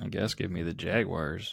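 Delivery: slow, unhappy, reluctant tone.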